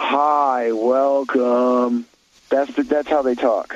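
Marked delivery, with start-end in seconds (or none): 0.0-2.1 put-on bored, unmotivated drawl. Imitating an unmotivated young worker greeting people at a desk, mock-unmotivated Gen Z drawl. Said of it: "This is exactly the tone you will receive".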